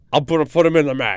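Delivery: put-on 1920s-style mobster voice. Repeating the boss's reply again: imitating Vince like a twenties mobster. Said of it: "You sound like a twenties mobster".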